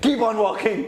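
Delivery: high, loud yell while laughing. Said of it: "I'm like".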